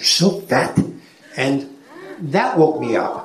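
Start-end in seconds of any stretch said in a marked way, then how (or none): 0.0-0.8 whispered jab, close in. Retelling what a comedian said before a show: imitating a whisper. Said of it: "whispers in my ear".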